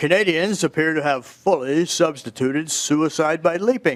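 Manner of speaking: put-on, attempted Canadian accent. Mid-talk, the speaker tries a sentence in a Canadian accent. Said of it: "I'll try to get my Canadian accent here".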